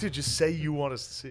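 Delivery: ordinary delivery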